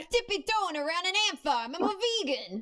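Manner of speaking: very high put-on East Coast character accent. Playing a vegan from the East Coast in a comic bit, in a put-on East Coast voice. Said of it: "East Coast Kira".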